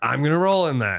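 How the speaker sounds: ordinary talk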